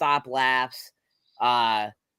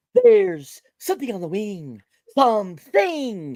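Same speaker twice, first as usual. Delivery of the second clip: swooping, dramatic put-on impression voice, pitched up; 7 semitones higher, 5 dB louder than usual. Retelling a movie scene where a character does William Shatner: William Shatner impression. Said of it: "does the William Shatner thing from Twilight Zone".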